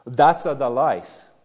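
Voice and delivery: put-on Italian accent. Quoting what an Italian mother often says, in a heavy Italian accent. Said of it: "in her heavy Italian accent in English".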